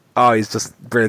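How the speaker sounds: ordinary talk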